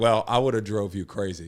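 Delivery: normal talking voice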